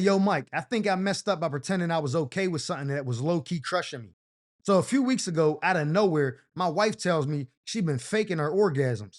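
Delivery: ordinary delivery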